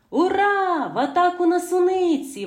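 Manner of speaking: merry, very high cheerful shout, Ура drawn out. Narrator reads Mykolka calling the children to the strawberries; cheerful shout. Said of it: "весело вигукнув Миколка".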